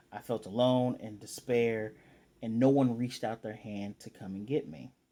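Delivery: ordinary talk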